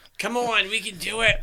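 put-on high-pitched, tipsy old woman voice. Retelling what a woman said to the group, in an old drunk lady voice. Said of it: "old drunk lady voice".

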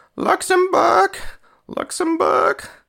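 very high, loud, obnoxious put-on announcer voice. Imitate a commentator welcoming the players to the field, in an obnoxious announcer accent. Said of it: "It sounded an obnoxious accent".

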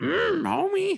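very high-pitched, cartoon-style housewife voice. Attempting Miss Piggy, drifting into a Marge Simpson voice. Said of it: "it becomes more like Marge".

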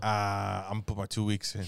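low, offhand, casual delivery. Joking about Pope Benedict quitting: imitating Pope Benedict. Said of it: "He's like".

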